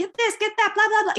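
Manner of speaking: high-pitched yelling.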